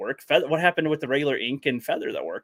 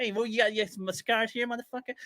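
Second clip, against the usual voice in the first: little-guy voice, high, hushed and quiet; 8 semitones higher, 7 dB quieter than usual. Retelling a fan film character checking for scars: Joe Pesci voice. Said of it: "he sounded like a little Joe Pesci".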